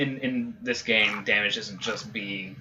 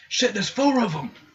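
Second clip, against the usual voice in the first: very high, shrill, loud yell projected as if over distance; 11 semitones higher, 7 dB louder than usual. Game master voicing a character heard from out of sight, shouting. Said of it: "You hear him shout like".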